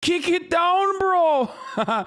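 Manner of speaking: put-on Canadian accent. Repeating a line from a video in a fake Canuck accent. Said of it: "sounds like my fake Canuck".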